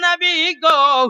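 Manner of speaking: high, loud, drawn-out calling cry.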